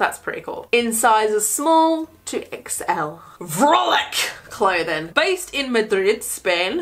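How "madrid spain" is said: put-on Spanish accent on Madrid. Reading a clothing brand's location, Spanish accent. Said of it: "That's my Spanish accent apparently".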